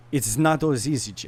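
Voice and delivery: worst-ever, bad put-on Italian accent. Quoting what she said to him: bad Italian accent. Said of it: "I'm going to do the worst Italian accent".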